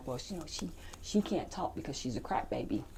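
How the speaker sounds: very quiet, breathy whisper. Retelling what a caseworker said to another lady in a courtroom: imitating a whisper. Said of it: "she kinda whispers this to another one of the ladies".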